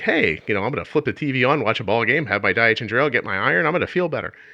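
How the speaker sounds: acted excited, happy, eager chatter. Retelling own thoughts while getting settled in the hospital: retelling own excited words. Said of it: "I was so excited to be getting my iron".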